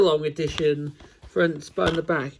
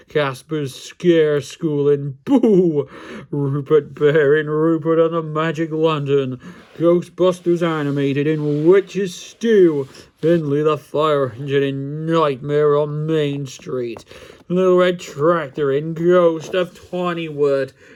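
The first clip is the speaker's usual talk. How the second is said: creepy, spooky, eerie put-on voice. Reviewing a DVD collection, reading the episode titles in a spooky voice. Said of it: "it's in a spooky voice".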